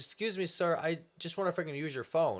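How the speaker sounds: polite, sweet, nice-sounding woman's voice. Telling a story, quoting a lady whose car broke down; imitating a nice-sounding lady. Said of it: "she sounded so nice".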